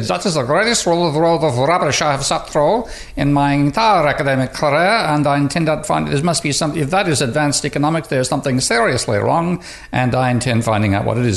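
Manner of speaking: clumsy put-on Austrian accent. Quoting a listener's verdict on an economics talk, in a very bad Austrian accent. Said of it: "my very bad attempt at an Austrian accent".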